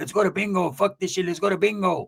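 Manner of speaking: straggly, ragged, scraggly woman's voice. Retelling overheard arguing, the speaker quotes a woman, imitating a scraggly voice. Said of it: "She got a scraggly voice".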